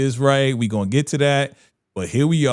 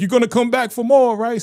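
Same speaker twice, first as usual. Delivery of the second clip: mock angry, voice pushed way up, very high-pitched; 10 semitones higher than usual. Retelling a show scene where he gets mad: imitating an angry line. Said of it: "And he get mad".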